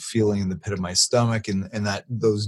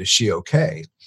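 usual speaking voice

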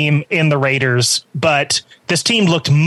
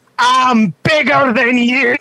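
mock, loud, drawn-out, boastful trash talk; 8 semitones higher, 3 dB louder than usual. Retelling what a player told the defender, imitating a loud yell. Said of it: "You went a little too loud".

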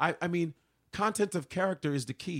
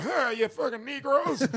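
put-on pitched-up voice of a little old man; 10 semitones higher, 5 dB louder than usual. Imagining an old dude shouting an insult: imitating an old man. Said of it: "old dude be like".

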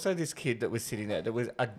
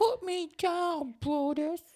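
put-on very high, small, sad little-girl voice, slow. Imitating the girl from the movie: imitating the girl's little sad voice. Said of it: "she's got that little sad voice".

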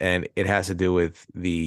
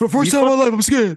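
loud, high-pitched, belted movie-hero delivery; 9 dB louder than usual. Quoting a boxing movie scene for the others: Stallone impression. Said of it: "That's a pretty good S-, Stallone impression".

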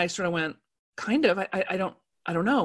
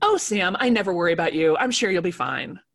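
mock loving but offhand, casually fond tone. Speaker retelling what a friend said to her, in a mock loving, offhand tone. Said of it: "in the most loving but offhanded way possible".

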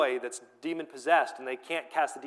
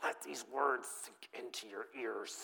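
very soft, acted seething through clenched teeth; 4 semitones lower, 12 dB quieter than usual. Reading a quoted line aloud to listeners, mock seething through gritted teeth. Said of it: "I can just hear him seething through his teeth".

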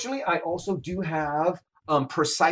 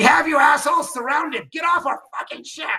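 shrill, very high, top-of-the-lungs yell; 10 semitones higher, 5 dB louder than usual. During an explosion on a ship, bluffing the enemy, yelling at the top of lungs. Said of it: "I'm going to yell at the top of my lungs".

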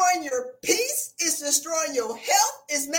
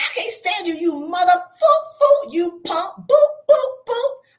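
mock seething, angry yelling rant; 2 semitones higher, 7 dB louder than usual. Acting out what someone thinks while facing a disliked boss: acting out an inner yell. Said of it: "He hears your inner voice yelling".

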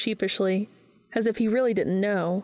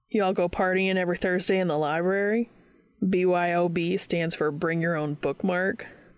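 ordinary delivery

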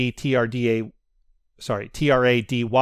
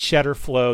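ordinary delivery

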